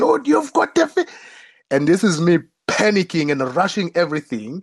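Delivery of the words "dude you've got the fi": very high shout at the top of the lungs. Retelling a friend's shout while fishing: imitating Matt shouting at the top of his lungs. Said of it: "Matt shouting at the top of his lungs".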